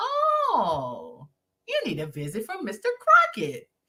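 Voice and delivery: high sinister voice with drawn-out stretched oh. Imitating a film character's opening line: sinister slow Mister Crockett voice. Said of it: "he was real".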